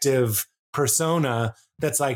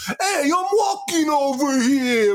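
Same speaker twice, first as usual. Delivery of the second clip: fake American accent, higher, slower; 10 semitones higher than usual. Mocking how people across the pond do Americans, in a fake American accent. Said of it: "ask John Oliver or anybody to do an American accent".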